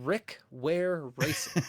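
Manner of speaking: very slow, deliberate, each word carefully drawn out. Trying to say a tongue twister name without stumbling: said very slowly. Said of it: "I have to really slow it down".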